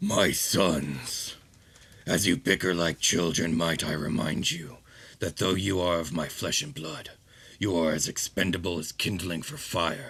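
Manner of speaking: deep, earthy, grinding rumble like gravel, from low down. Voicing the dragon addressing its sons for the players, in deep rumbling Pulsar Dragon voice. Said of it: "a voice that is both deep and rumbling".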